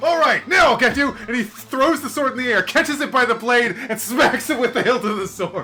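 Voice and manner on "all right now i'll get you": put-on taunting swordsman voice. Describing a swordsman attacking in the game: mock swordsman taunt. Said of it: "it's like a swordsman, like".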